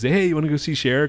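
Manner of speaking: playful half-joking voice. Retelling how he asked someone along to a show, retelling a half-joking invite. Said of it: "Kind of half jokingly".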